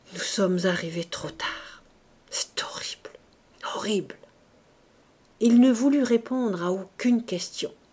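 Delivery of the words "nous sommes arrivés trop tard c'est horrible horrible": murmured under the breath, quieter. The mayor speaks so that the ladies only just hear him: murmured. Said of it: "l'entendirent seulement murmurer".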